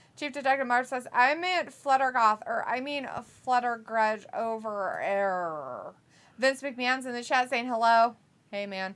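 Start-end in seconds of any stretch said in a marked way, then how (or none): none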